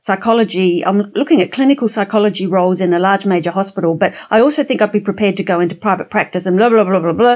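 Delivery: fast, rattled-off run-on without a pause. Advice to pause between three areas, example rattled off without pauses. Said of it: "If you rattle off".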